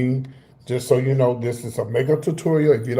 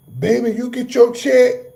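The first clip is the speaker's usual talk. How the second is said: very high, loud, hollering woman's voice; 10 semitones higher than usual. Retelling a woman on a train talking to another lady, imitating a loud woman. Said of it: "she was really loud".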